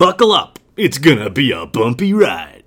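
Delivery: big, loud, dramatic broadcast-announcer voice. Talking about draft speculation over the Browns and quarterbacks, in an announcer voice. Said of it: "that's my announcer voice".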